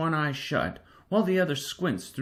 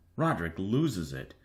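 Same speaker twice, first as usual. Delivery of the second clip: ordinary delivery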